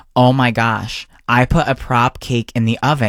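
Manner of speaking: ordinary talk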